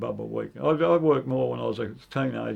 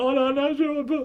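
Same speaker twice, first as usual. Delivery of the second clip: put-on crying, much higher, slower; 10 semitones higher, 3 dB louder than usual. Retelling being screamed at in class over his uniform, acting out his own crying. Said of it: "and I started crying".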